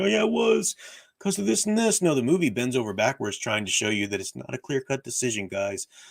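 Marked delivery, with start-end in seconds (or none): 0.0-2.0 high-pitched mocking voice. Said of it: "People try and twist it and say".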